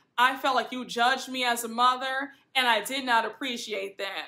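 ordinary talk, nothing marked

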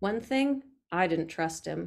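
plain reading voice

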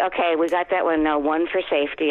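plain

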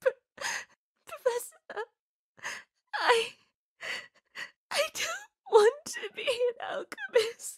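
tearful speech broken by sobs. Confessing to the Professor a wish not to become an alchemist, crying while talking. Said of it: "crying is a perfectly normal human reaction".

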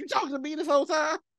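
mock irritated, put-out, fast, aggravated delivery. Retelling how a man turned around, imitating his aggravated question. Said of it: "He turned around aggravated".

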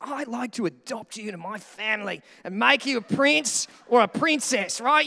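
clumsy, bad, failed attempt at royal British accent. Speaker asks listeners to imagine the Queen adopting them: bad Queen Elizabeth impression. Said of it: "I can't do it. I can do Australian. I just can't do British".

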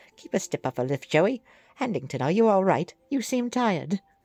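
cartoon anime-style schoolboy voice. Voicing the character Handington, giving him Bakura's voice. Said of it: "He needs to have Bakura's voice".

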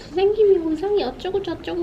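put-on high, eager, excited kid chatter.

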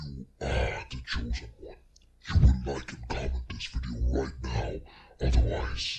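evil demon voice. Tutorial giving a quick preview of the voice effect, echoey demonic voice. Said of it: "the demonic voice".

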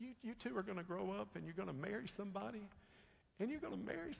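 play-acted very high, near-tearful voice. Retelling what her aunt said to her at eight, imitating aunt's near-crying voice. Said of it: "almost in a cry voice".

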